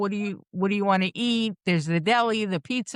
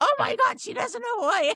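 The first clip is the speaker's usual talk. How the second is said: very high, shrieking screamed outburst; 14 semitones higher than usual. Telling her sister what the sister screamed when the speaker hesitated, retelling a scream. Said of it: "you screamed".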